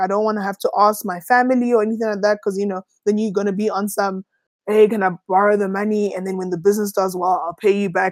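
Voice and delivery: ordinary talk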